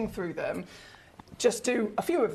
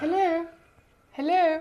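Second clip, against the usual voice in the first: high, loud, posh telephone-answering voice; 8 semitones higher, 5 dB louder than usual. Speaker shows a friend how they sound answering the phone: phone voice. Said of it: "My phone voice is the worst".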